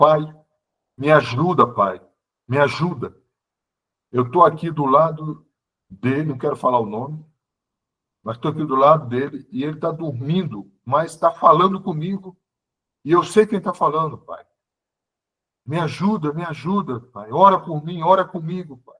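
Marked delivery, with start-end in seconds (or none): none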